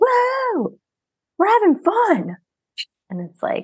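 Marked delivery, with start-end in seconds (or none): 0.0-2.4 very high, swooping, try-hard forced party whoop. Mocking movie characters trying too hard to have fun, imitating forced party yelling. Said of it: "running around the cave yelling like".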